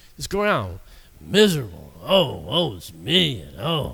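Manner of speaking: mock ogre-like growl. Speaker imitates people who groan when greeted, imitating a growling groan. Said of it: "like a bunch of ogres walking around growling".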